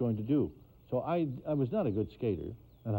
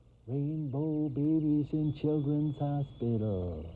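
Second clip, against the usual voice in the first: slow, small, tiny little voice; 3 semitones higher than usual. Retelling a little voice heard behind him: imitating a little voice. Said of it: "I hear a little voice behind me go".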